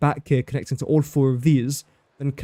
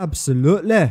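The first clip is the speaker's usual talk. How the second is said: terrible, fake put-on Scottish accent; 3 semitones higher than usual. Agreeing while adding a pipeline pump, in a terrible scottish accent. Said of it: "That was a terrible Scottish accent".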